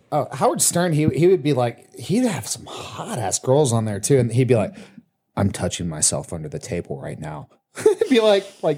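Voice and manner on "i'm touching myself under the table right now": low, quiet, dead serious deadpan. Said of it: "dead serious".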